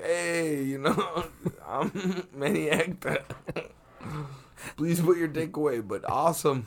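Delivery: put-on light touch of Spanish accent. Retelling what Manny Acta said at a club: Manny Acta impression, slight Spanish accent. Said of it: "he spoke with a much less Spanish accent".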